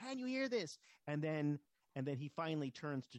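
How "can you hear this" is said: shrill, very high screaming. Retelling a film scene where one character screams in the other's ear: imitating Richard Pryor screaming. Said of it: "keeps screaming in his ear".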